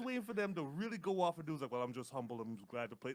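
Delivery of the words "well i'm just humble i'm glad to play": tame, modest, bland, boring delivery. Retelling what players say in interviews: imitating a boring interview. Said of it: "I was so mad".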